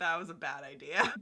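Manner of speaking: mock deadpan delivery. Recapping a scene, quoting a character's flat reply: retelling a deadpan line.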